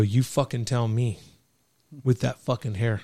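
ordinary talk

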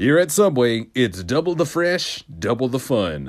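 tv commercial announcer voice. Showing off commercial impressions: Subway commercial impression. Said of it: "commercial impressions".

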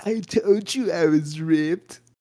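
big, slow, high-pitched delivery. Describing a cartoon Halloween episode, quoting the character's line, Muscle Man impression. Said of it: "That was a pretty good impression".

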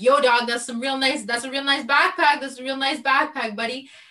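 high-pitched yell, calling out. Retelling yelling across the wall at the one who stole the backpack, retelling own yell. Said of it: "I'm still yelling across the wall".

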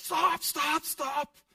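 frantic panicked screaming, very high and very loud. Retelling dog owners shouting at a reversing car, imitating panicked yelling. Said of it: "the owners of those dogs freak out".

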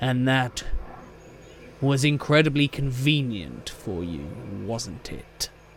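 words snarled out in a snarl. Narrator voicing a character who snarls at the listener's character: snarling. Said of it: "He snarls at you and he says".

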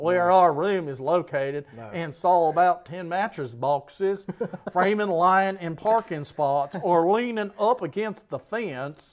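loud put-on drawling Texas accent. Reading a review aloud after being asked to: Texas drawl. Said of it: "Let's see if I can do a Texas draw".

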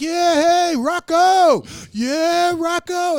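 mock pumped-up cheer, very high, loud, drawn-out. Retelling a comedy bit about a fan leaving Rocky: imitating a pumped-up Italian guy. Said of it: "they come out all pumped".

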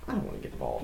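mock reluctant whisper, high and soft.

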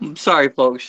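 speaking through laughter. Apologizing to the audience about a cat's antics, laughing while talking. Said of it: "I'm laughing".

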